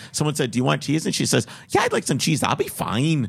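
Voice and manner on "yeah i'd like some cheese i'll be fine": put-on thick, sing-song Minnesota accent laid on heavily. Retelling what a woman at a Fargo Subway said, in a thick Minnesota accent. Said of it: "super thick Scandinavian Minnesota Fargo Canadian accent".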